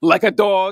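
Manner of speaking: heavy, grave, weighty delivery. Retelling how Donald Trump announces a killed terrorist: Donald Trump voice with gravitas.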